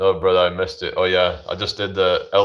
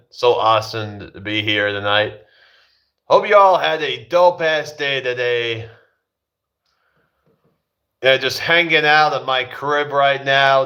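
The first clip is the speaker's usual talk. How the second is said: put-on American accent, pitched up, from UK speaker; 6 semitones higher than usual. A speaker from the UK showing off an American accent. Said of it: "I can like do an American accent".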